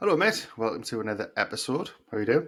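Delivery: very official, formal, prepared, script-read sounding. Opening a new episode by greeting a mate: very official-sounding. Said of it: "you sounded very official there".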